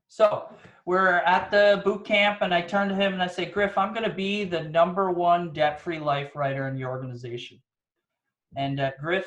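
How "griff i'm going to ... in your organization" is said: normal talking voice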